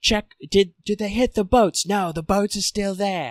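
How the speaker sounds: put-on British accent. Speaker imagines a ground crew member's words: British accent. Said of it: "I've done like five different British accents".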